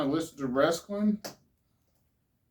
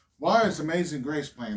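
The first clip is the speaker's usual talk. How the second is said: ordinary delivery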